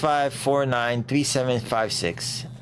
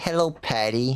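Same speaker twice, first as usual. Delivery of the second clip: nerdy, geeky put-on voice. Explaining his voice acting, the speaker demos a character, nerdy character voice. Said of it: "I try to make him sound nerdy".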